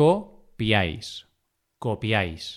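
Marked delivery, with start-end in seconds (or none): 0.0-1.3 very slow, each syllable drawn out separately. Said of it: "vocal abierta tónica más vocal cerrada átona".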